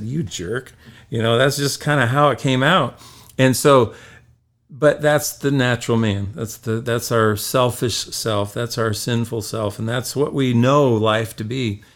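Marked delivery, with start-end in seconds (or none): 0.0-0.7 put-on muttering under breath, quieter. Retelling a remark to a car that braked in front: imitating muttering under breath. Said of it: "I just kinda said under my breath".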